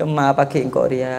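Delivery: soft, tearful, murmured voice.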